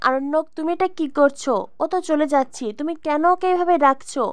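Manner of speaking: plain reading voice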